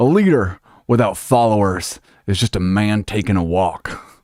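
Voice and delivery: booming, slow, drawn-out, weighty voice. Asked to do the best impression close to the microphone: John Boehner impression. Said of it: "do the best... Boehner that you can".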